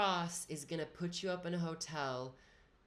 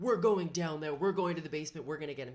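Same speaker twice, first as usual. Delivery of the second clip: put-on frantic, fired-up, loud, rushed outburst; 5 dB louder than usual. Retelling a roommate going after a package thief: imitating a freaked-out roommate. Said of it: "freaks out and he's like".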